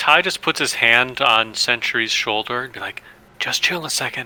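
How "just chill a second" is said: hushed, very quiet whisper. Voicing a character who stops a friend from charging: whispering in character. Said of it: "just try to whisper that as quietly as possible".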